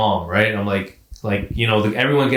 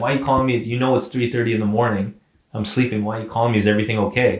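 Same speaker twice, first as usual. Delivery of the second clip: normal talking voice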